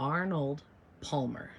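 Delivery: very slow, loud, drawn out word by word. Naming her husband's favorite, which she can never say right: said real slow. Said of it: "I have to say it real slow".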